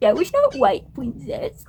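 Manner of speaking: mock patronizing, talking-down, swooping sing-song tone. Quoting what Rowan said to the speaker: mock-condescending, like Rowan. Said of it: "he was putting on a, like a condescending tone of like".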